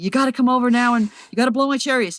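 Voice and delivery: high, frantic, panicked, urgent pleading tone. Describing callers who need helicopters after rain; imitating a frantic caller. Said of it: "they're all frantic and they say".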